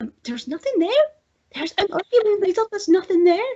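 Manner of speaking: very high, put-on Scottish accent. Retelling what the other speaker said in a video: imitating a friend's Scottish accent. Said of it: "your Scottish accent on, and you're like".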